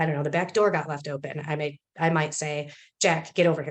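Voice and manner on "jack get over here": short, clipped and upset. Example of calling someone over about an open door, curt upset tone. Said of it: "if I'm upset about something ... A lot more curt, fewer words, right to the point. My tone is different".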